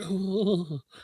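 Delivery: soft, drawn-out, prim, dainty little ooh. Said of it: "that was the sound he made".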